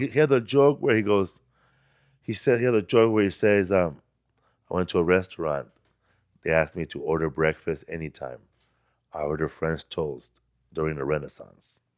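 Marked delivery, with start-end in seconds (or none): 4.7-11.7 low, dry deadpan monotone, flat and unmoved. Retelling a comedian's joke to show what he does, deliver it in a Steven Wright deadpan. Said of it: "He does like deadpan".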